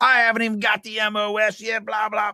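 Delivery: angry, griping outburst. Retelling an army story, the speaker acts out a man's reply: imitating an angry complaint. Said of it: "He then gets mad again and goes".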